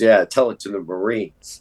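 mock-sarcastic delivery. Retelling a moment when someone was baring his soul, mock-sarcastic reply. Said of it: "Eddie was sarcastic".

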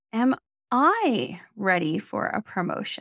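leaning hard on the word I. Suggesting a differently emphasized question, with stress on i. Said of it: "putting the emphasis on the I".

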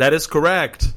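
put-on high call, called out loudly. Retelling a moment at a live wrestling event: imitating own past yell. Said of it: "and I yelled out".

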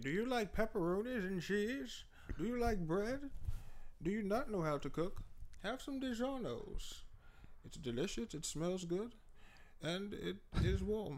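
put-on soft, high, old-timey 1800s voice. Asked to do a DiGiorno pizza promo in an old-timey 1800s voice. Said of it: "Do it in the 1800s voice".

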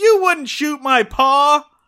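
very high-pitched, too-loud, desperate yell. Retelling a scene where the child runs up: imitating Ronnie Howard shouting. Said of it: "inability to say anything at a normal volume".

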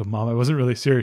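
normal talking voice

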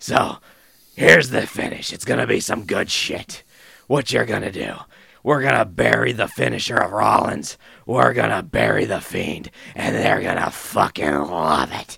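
rough, creaky, raspy put-on voice. Imagining Vince backstage planning the match finish: Vince McMahon impression. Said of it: "let me do my best Vince McMahon".

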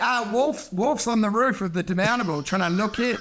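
plain

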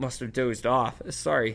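ordinary delivery

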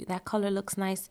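ordinary delivery

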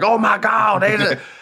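orc announcer voice, "god" stretched out very high. Show how a voice actor does his wrestling league announcer, an orc or troll version of JR. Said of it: "And so the voice is like".

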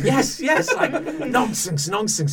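excited, eager, very high, loud and bouncy. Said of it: "hopping around going".

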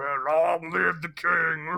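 very slow trucker-like drawl, long drawn out. Mocking the same scene, comparing the lead to a cartoon villain: imitating Bradley Cooper as Scar. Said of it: "Is that how Scar talked in the movie?".

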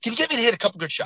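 fast, high, rattled-off talk, words tumbling out. Retelling how a golfer he worked with would talk, imitating fast talking. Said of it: "he'd kind of talk fast".

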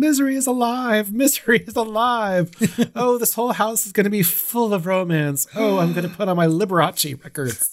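put-on thrilled, very high-pitched, gushing excitement. Retelling the nurse's excited lines from the film: imitating excited Annie. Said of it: "she's going through the house going".

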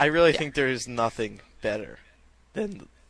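voice breaking, choked up. Talking about a wonderful letter from a listener, voice cracking. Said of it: "My voice is cracking".

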